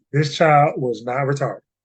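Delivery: deadpan, earnest, utterly sincere, no joking. Insisting on a point to listeners: straight face, all sincerity. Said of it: "with a straight face and all sincerity".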